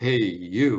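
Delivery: low, loud, booming grown male voice. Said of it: "this booming male voice that simply says".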